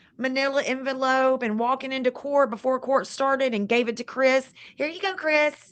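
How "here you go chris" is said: higher-pitched female voice. Retelling how a woman handed papers to Chris before court: imitating her. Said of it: "I'm laughing at your imitation".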